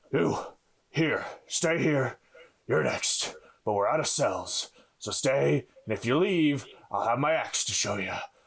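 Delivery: unhinged, furious, seething menace, huffed out. Voicing a war-painted captor in the game: angry, mad huffing voice. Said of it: "with anger and madness in his eyes as he huffs out".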